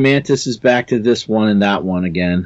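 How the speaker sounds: ordinary delivery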